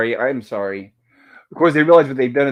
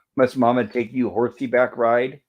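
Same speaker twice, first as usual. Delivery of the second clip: normal talking voice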